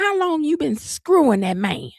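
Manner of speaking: loud, high-pitched voice. Retelling what a woman on TV said, mimicking her loud talking. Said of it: "she was talking loud".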